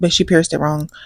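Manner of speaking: normal talking voice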